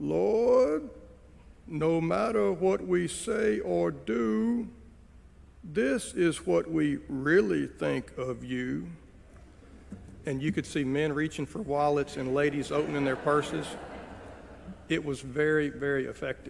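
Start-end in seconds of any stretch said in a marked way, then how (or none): 0.0-8.9 very slow, sweet syrupy Southern drawl, stretching "do". Retelling a man's offertory invitation from the lectern, in a syrupy southern drawl. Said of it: "said in his syrupy southern drawl".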